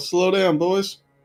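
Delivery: shouting. Pulling back on the reins while the mules go too fast: yelling at the mules.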